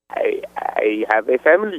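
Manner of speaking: very slow, drawn-out, fake Mexican accent. Prank calling someone while playing a Mexican drive-thru worker. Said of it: "trying to be the Mexican who works at the McDonald's drive-thru".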